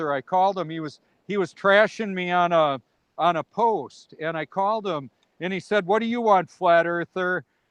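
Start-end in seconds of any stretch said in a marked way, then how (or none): 5.8-7.4 put-on contempt, disdainful and scornful in every word. Retelling a call with an angry vegan atheist: imitating a disdainful voice. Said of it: "with a lot of disdain in his voice".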